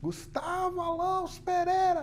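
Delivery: put-on very high-pitched scolding voice. Recalling how mom called the full name before a scolding, mock-scolding 'Gustavo Alonso Pereira'. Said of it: "chamava pelo nome completo com uma entonação típica".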